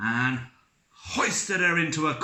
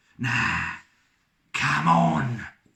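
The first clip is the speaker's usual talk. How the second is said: raised, growling voice pushed out louder; 2 semitones higher, 5 dB louder than usual. Narrator reading a story character's spoken line aloud, growling. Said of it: "he growled".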